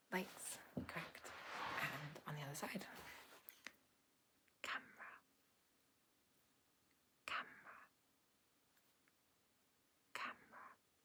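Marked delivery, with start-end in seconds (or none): 4.6-10.6 word breathed out in a soft whisper. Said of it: "I'm just gonna whisper some words".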